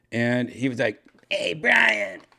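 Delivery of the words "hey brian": very high, loud, shrill called-out voice. Retelling a phone call from a buddy: failed Steve-O voice. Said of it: "I can't do a Steve-O voice".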